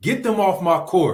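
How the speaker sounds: yelling, high-pitched and loud. A player recalls hearing the coach during games, imitating Coach Rick yelling. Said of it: "hearing Coach Rick yell".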